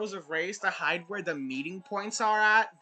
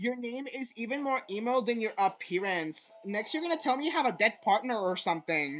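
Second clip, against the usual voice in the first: ordinary talk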